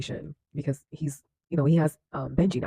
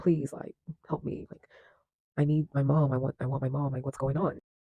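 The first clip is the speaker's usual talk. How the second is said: put-on pleading voice. Retelling a show scene where a boy begs for help: imitating someone pleading. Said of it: "pleading with him, like".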